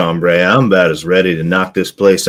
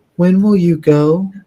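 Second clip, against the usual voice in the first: put-on very high-pitched little girl voice; 11 semitones higher than usual. Voicing Inkatink's question to the group, in a little girl's voice. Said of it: "Inkatink says in a little girl's voice".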